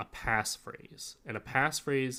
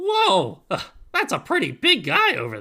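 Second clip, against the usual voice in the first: very loud, high, swooping goofy goblin voice; 8 semitones higher, 12 dB louder than usual. Showing the go-to NPC voices they often pick, goofy gnome or goblin voice. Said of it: "that's a voice kind of like this".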